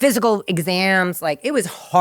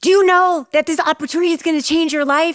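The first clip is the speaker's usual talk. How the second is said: put-on English accent, very high pitched; 10 semitones higher, 4 dB louder than usual. Retelling how Mark Burnett came to your door with his team, in Mark Burnett's English accent. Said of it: "in his English accent".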